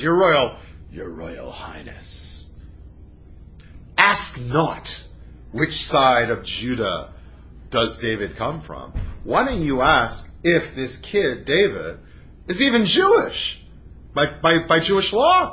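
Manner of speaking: acted cynical, bitter sarcastic tone. Retelling a man's answer to the king about a kid, acting out cynical, bitter sarcasm. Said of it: "like with the cynicism and the sarcasm and the bitterness".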